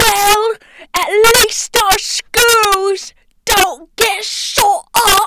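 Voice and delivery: wailing zombie voice, British accent, high, loud, crying.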